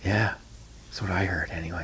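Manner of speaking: secretive, hushed, barely voiced, very quiet whisper. Playing a small-talk bit, sharing a rumour with a friend: whispering. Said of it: "You don't have to whisper".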